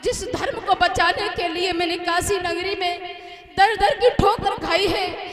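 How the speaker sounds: high, loud anguished wail.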